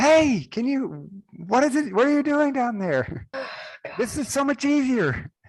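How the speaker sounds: screaming in a character voice. Miradar shouts down to Frida from way up in the air, full-on screaming. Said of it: "And like yell, like full on screaming it".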